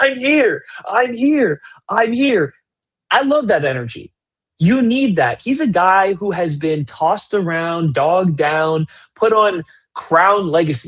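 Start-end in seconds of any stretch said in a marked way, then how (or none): 0.0-2.5 play-acted very high, drawn-out screaming. Retelling an open player yelling to his teammates: imitating Nikola Pekovic screaming. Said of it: "just absolutely screaming, yelling at his teammates, like".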